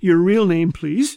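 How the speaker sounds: ordinary talk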